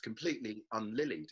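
ordinary talk

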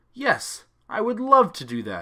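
very high-pitched, loud, eager, excited exclamation. Alex answers the question put to him, exclaiming. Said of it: "Alex exclaimed".

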